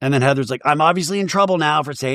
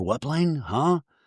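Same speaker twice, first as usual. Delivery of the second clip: confused, blank, puzzled mumble; 6 dB quieter than usual. Retelling a reality show scene, imitating Brittany looking confused. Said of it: "Brittany looks confused".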